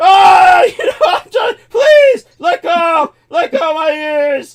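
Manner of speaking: very high, very loud, shrill, pained, pleading wail. Retelling a man's reaction during a confrontation, imitating a man screaming. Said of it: "he's like screaming".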